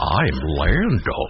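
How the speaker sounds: dopey, well-meaning, dim-witted, lovable character voice. Repeating the only thing Lando can say, in Lando's specific voice. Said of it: "In that specific voice".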